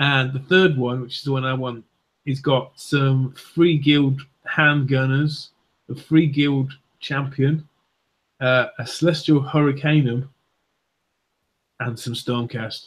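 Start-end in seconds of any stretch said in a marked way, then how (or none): 11.8-12.9 soft, deflated, let-down, disappointed delivery. Listing the contents of a wanted box, ending disappointed. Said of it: "You sounded so disappointed with that last".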